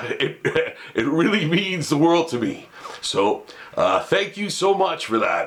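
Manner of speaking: emotional, choked-up, on the verge of tears. Thanking viewers for the excitement they show at venues, choked up. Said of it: "I'm getting choked up right now".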